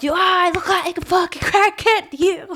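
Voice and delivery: very high-pitched, slow, drawn-out, angry, pissed-off. Retelling what was said to someone after a store visit: imitating being pissed off. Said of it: "I'm fucking pissed off".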